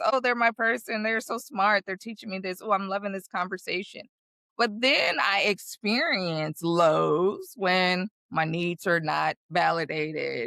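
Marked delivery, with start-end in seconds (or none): none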